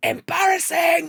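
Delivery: booming, very loud, very high-pitched shout. Describing what they shout when someone is really losing it: retelling own shout. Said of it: "I let myself shout".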